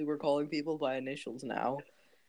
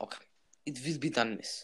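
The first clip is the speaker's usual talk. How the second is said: put-on Russian accent, quieter; 3 semitones lower, 4 dB quieter than usual. Playing the one taking a customer's order in a skit, put-on Russian accent. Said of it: "I am not being racist with this accent".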